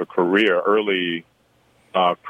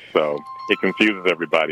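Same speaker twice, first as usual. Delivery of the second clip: plain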